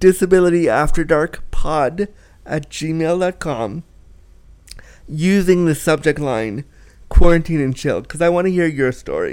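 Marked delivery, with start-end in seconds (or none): 0.0-3.8 slow, deliberate, carefully spelled-out repeat. Trying the email address again after rushing it: slower careful retake. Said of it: "Let me try again".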